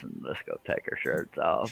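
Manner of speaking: very breathy, gravelly, rasped-out whisper. Recalling an attempt from the night before, the speaker redoes the gravelly Matthew McConaughey impression. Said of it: "When I was talking like this".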